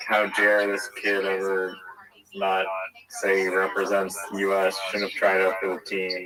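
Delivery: ordinary talk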